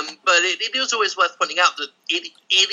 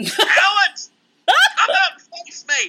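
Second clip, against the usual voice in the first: mock scream, acted out, much higher pitched. Picturing oneself on pain medicine and red wine, retelling a scream. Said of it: "I'm just screaming".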